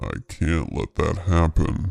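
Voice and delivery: very deep, very low demonic voice. Reading a horror story aloud, voicing the intruder: low demonic tone. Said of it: "In the same low, demonic tone".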